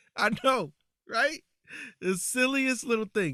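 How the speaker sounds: heavily laid-on sarcasm, high pitch.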